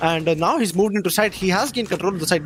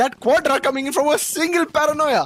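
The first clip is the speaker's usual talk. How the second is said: way too excited, higher; 9 semitones higher than usual. Calling a four-kill round in a match: overexcited. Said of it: "I'm way too excited right now".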